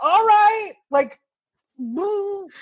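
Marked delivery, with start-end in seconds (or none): 0.0-0.7 loud yell, pitched way up high. Retelling yelling back at a stranger in a car: imitating own past yell. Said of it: "I just yelled back".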